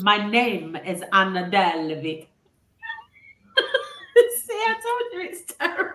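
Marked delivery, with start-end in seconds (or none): 0.0-2.3 slow, poorly done Caribbean accent. Asked to demonstrate one of her voices, the speaker does Anna Delvey in Caribbean accent. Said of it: "I've never heard Anna Delvey with a Caribbean accent".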